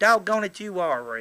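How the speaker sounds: put-on little girl's country brogue. Retelling what a little girl said on meeting Santa Claus, in a little country brogue. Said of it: "She had that little country brogue".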